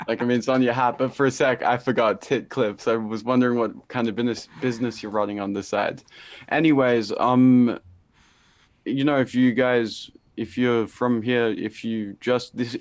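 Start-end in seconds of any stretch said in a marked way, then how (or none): 9.2-12.8 stammering, stuttering, full of false starts and restarts. A podcast host addresses first-time listeners, stuttering. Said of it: "I'm stuttering. I'm so sorry".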